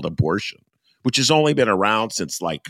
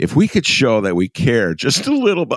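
stifled laughter, pitch edging up; 5 semitones higher, 4 dB louder than usual. Reading a newspaper quote aloud, reading while holding back laughter. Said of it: "I'm trying to read this with a, a straight face".

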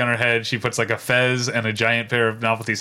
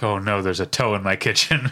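normal talking voice

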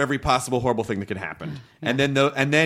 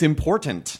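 important carefully articulated, each syllable distinct; 4 semitones higher than usual. Agreeing with another speaker about listening: enunciating the word important. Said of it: "You just really enunciated that word".

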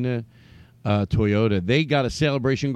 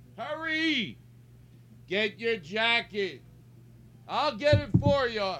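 shouting; 11 semitones higher, 6 dB quieter than usual. Speaker doing a mock car-dealer sales pitch, yelling. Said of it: "I didn't mean to yell".

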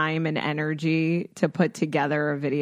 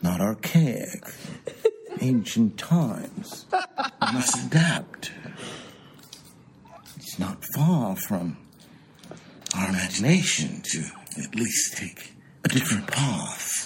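lower-pitched put-on British royal voice; 6 semitones lower than usual. Doing an impersonation of Prince Charles on a shared video. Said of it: "my dad's impersonation of, um, Prince Charles".

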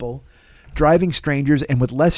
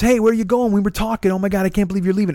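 fast-talking put-on voice, higher, faster; 6 semitones higher than usual. Retelling how a guy opened the door and talked at him, imitating a motor-mouth guy. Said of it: "And he like motor mouths".

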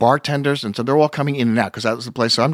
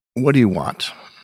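short, clipped delivery. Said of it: "in her inimitable way".

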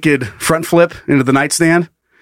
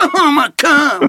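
put-on cartoon boy voice, higher pitch; 12 semitones higher than usual. Retelling a funny video, imitating the guy's voice: Cartman voice. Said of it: "sound like Cartman".

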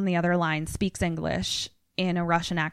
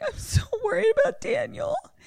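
play-acted, very high, sloppy drunken sobbing and blubbering. Retelling a scene where a drunk character starts crying: imitating drunk crying. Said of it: "He just starts crying, and he's just like".

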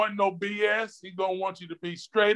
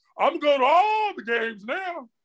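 mock excited, drawn-out, high and swooping voice; 6 semitones higher than usual. Retelling what Ray said after long refusing to go: imitating Ray's excited voice. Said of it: "you should have heard the excitement in his voice".

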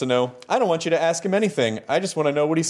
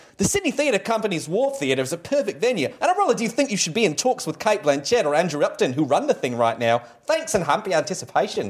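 poorly faked Australian accent. Reading a listener's letter aloud after being asked: bad australian accent. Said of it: "I do a bad Australian accent".

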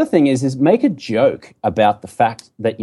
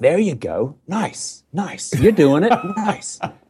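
high, encouraging, mock American accent. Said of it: "all this kind of encouragement".

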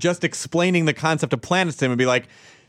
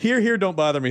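mock aggravated grumbling, much higher pitch; 4 semitones higher than usual. Describing a man with a SpongeBob picture on his garage, imitating him acting aggravated. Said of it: "he acts all like aggravated".

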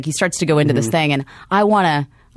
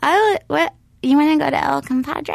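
very high, out-of-control voice popping up; 10 semitones higher than usual. Retelling her reply to being asked out: Sarah Silverman-y voice. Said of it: "That's the voice that came out".

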